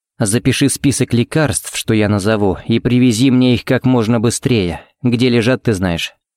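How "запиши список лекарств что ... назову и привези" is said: plain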